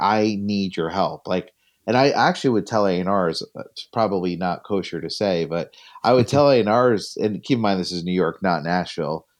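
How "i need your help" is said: mock desperate pleading, slower. Recalling begging New York A&Rs for help, acting out desperate begging. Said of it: "like desperate begging".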